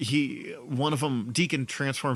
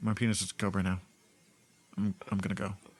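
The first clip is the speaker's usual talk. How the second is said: mock-calm voice, lower pitch; 4 semitones lower, 4 dB quieter than usual. Retelling a character's reaction to a strange transformation: imitating a calm character. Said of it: "And very calmly, he's like".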